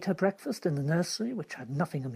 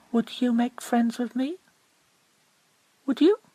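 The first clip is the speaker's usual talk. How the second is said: tender, eager, coaxing tone, pitched up; 7 semitones higher, 4 dB louder than usual. Narrator reads Mary moving softly toward the little tree, soft, eager and coaxing. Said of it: "in a tone so soft and eager and coaxing".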